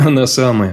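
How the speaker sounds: plain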